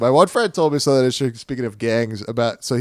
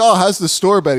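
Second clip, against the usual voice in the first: high, loud, breezy, fake-casual tone; 7 semitones higher, 5 dB louder than usual. Retelling pretending to chat to a friend near trouble: imitating fake casual small talk. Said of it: "I go like".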